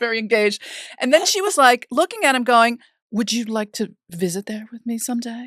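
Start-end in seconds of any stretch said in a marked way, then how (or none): 3.1-5.5 mock flirty robot voice, quieter. Telling how a female robot flirted with her husband, imitating a robot's flirty tone. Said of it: "started flirting with him".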